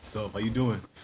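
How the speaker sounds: voice dropped an octave. Retelling a greeting on a video call: imitating a voice dropped an octave. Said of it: "voices went an octane down".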